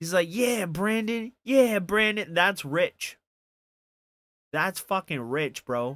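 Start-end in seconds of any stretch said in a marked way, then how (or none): 0.3-2.3 repeated, high, yelled-out cry. Retelling a movie scene where a man yells out a name: imitating someone yelling out. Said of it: "he starts yelling out Brandon's name".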